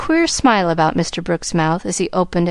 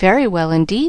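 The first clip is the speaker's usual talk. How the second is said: plain reading voice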